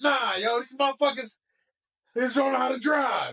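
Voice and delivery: put-on heated, aggressive outburst. Retelling what he said about other drivers: imitating an aggressive rant. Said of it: "Why are you so aggressive right now?".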